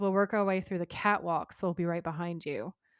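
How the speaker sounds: normal talking voice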